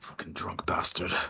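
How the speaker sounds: muttered under breath. Voicing a bartender as a drunk customer leaves: muttered under his breath. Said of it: "under his breath".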